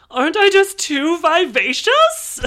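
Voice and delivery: shrill, very loud, very high, swooping sing-song put-on voice. Reviewing a movie, imitating an actress in a movie. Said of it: "Here's my impression of her in this movie".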